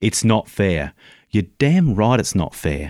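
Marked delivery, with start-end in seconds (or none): 0.0-0.9 firm, emphatic delivery with real weight. Retelling how someone showed a student to say it, said with meaning. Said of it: "say it with meaning".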